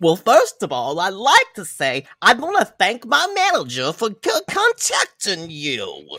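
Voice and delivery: seventies-style cartoon bear voice, high and swooping. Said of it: "You don't sound like, um, a nineteen seventies cartoon at all".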